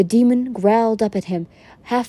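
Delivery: plain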